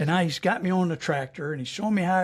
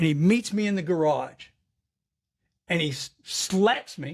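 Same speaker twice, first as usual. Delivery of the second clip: ordinary talk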